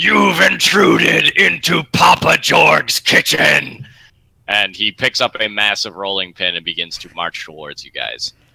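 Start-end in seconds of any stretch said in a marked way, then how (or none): 0.0-3.9 slow, rasping, rough, raised orc voice. Voicing an orc who confronts intruders in his kitchen: orc voice. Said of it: "the orc, uh, turns around, ... and he says".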